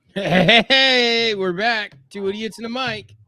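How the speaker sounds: showy, high cartoon clown-host voice. Opening the show with a greeting: sounding like Krusty the Clown. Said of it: "that sounded like the Krusty the Clown".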